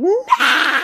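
put-on scream at the very top, very high shriek. Retelling screaming over dad's lap as a child: imitating a scream. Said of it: "I was screaming".

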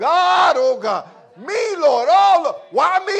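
anguished despairing wail. Recalling going through a process kicking and screaming: mock crying and screaming. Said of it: "Kicking and screaming".

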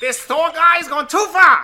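very high, loud, angry, furious rant. Imitating George Costanza as Hawkeye, angry mid-fight: angry George Costanza impression. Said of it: "pretty good George Costanza, angry in the middle of a fight".

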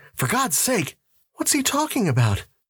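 uneasy, worried, anxious. Margaret asks about a distressed man who struggles against them; nervous. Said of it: "Margaret asked nervously".

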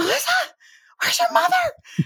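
mock very high, piercing shriek. Retelling their dad calling out for their mother, imitating dad's shriek. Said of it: "the shriek in his voice of".

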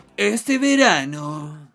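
typical stock radio-announcer delivery. Introducing the next news item on the show, in a typical announcer voice. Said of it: "la típica voz de locutor".

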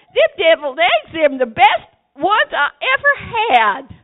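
very loud, high, put-on Southern accent at full volume. Talking like people do down south, in a put-on Southern accent. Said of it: "I'm working on my accent here".

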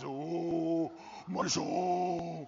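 theatrical movie-god voice with long drawn-out oh. Mocking how believers' films dramatize God speaking: imitating dramatic film voice of God. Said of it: "until they do that voice".

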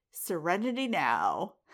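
normal talking voice

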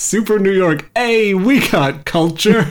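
play-acted, slow, high-pitched hollering. Retelling a film scene where a guard answers back: imitating a yell back. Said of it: "one of the guys just yells back".

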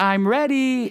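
shrill, very high yelled call. Describing her bedtime routine, the speaker retells her yell downstairs. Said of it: "It literally sounds just like that".

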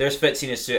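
ordinary talk

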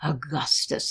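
with a sigh. A woman, startled by a hand on her shoulder, turns around, sighing. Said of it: "she sighed".

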